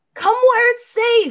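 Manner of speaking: shouting. Calling through a smashed window to Clive in character: yelling to Clive. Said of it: "yell to Clive and say".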